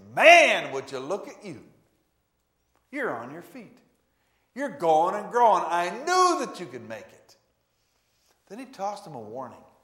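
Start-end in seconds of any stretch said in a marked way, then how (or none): 0.1-7.3 put-on, very loud, beaming, swooping, cheering enthusiasm. Acting out an encouraging greeting to a healed man: acting out an enthusiastic greeting. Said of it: "He said it with enthusiasm and reinforcement".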